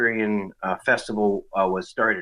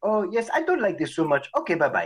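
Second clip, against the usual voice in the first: very high, sing-song, put-on French Canadian accent; 9 semitones higher than usual. Retelling what a date said after the film: imitating a french canadian accent. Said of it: "she's all French Canadian".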